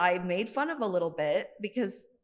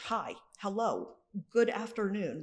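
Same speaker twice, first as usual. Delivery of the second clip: put-on mechanical, overly formal robot voice, slow; 4 dB quieter than usual. Retelling a classmate's online messages: imitating a robotic formal greeting. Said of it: "super robot formal".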